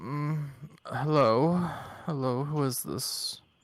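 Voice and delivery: weary high tone. Voicing a familiar guild contact answering a call: higher-pitched tired voice. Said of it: "a higher tone, someone in very t-, a big term of being tired".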